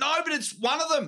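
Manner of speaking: put-on very high-pitched, excited child voice.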